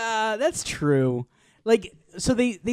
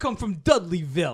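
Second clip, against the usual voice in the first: impression, pitched up and louder. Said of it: "perfect Dudley Moore".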